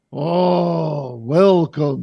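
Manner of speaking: loud booming voice, 'oh' drawn out. Voicing a beholder welcoming the players as they walk in, in a booming voice. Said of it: "his like booming voice through your minds".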